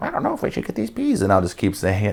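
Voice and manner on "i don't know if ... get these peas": put-on, mimicked old lady voice. Retelling copying a shopper's voice right after hearing it: retelling mimicking an old lady. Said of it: "And then I'll be like, ... I do that with voices too".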